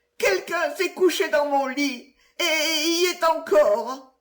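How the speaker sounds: tiny, high, piping little bear voice. Reading a fairy tale aloud, voicing the littlest bear crying out: tiny fluting little bear voice. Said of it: "de sa toute petite voix flûtée".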